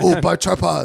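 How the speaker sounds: put-on Chinese accent. Joking about selling tripods on TikTok, mock Chinese accent. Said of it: "Did he have to do the accent?".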